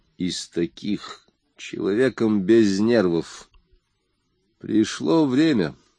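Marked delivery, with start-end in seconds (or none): 4.6-5.7 firm, curt, steady, final-sounding. Facing five gangsters alone, a man firmly cuts them off. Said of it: "твердо отрезал он".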